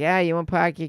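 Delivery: Boston accent, jaw kept closed, mouth barely open. Comparing how regional accents sound, boston accent. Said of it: "And Boston's just like that. Like".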